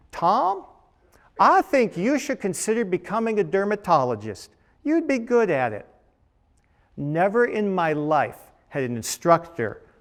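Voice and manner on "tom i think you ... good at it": put-on Southern US Georgia accent. Retelling what the doctor he followed told him, imitating a georgia accent. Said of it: "He said in his Georgia accent".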